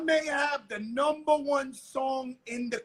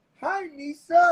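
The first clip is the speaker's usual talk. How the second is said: put-on sweet nice-guy voice, higher, louder; 2 semitones higher, 5 dB louder than usual. Retelling how the listener stopped and greeted Misa, mimicking a nice guy voice. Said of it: "said in a nice guy voice".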